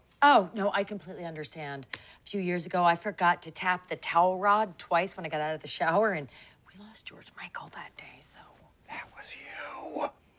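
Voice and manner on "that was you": barely audible, very soft, breathy hushed whisper.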